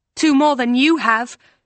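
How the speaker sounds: snappy, high-pitched, snapping straight back. A woman answers a much bigger man's taunt: retort. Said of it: "April retorted".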